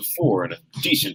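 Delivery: ordinary delivery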